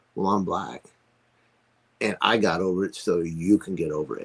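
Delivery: normal talking voice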